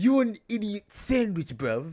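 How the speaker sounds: put-on terrible British accent, very loud, high, bellowing. Joking that someone stands there like Gordon Ramsay, in a terrible British Gordon Ramsay accent. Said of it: "I'm doing my best terrible accent".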